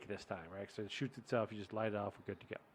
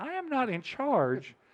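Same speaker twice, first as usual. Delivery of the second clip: put-on angry yell, higher; 13 semitones higher, 3 dB louder than usual. Retelling own reply to people after a firework mishap: retelling own angry reply, yelling. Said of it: "I feel like you're yelling at me".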